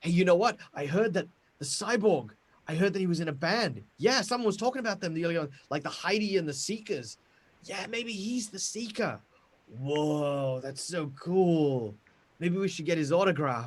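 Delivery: hushed gossiping voices. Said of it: "People are kinda whispering".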